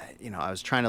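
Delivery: ordinary talk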